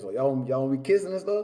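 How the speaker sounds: ordinary talk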